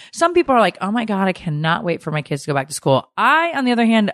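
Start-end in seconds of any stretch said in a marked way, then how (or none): none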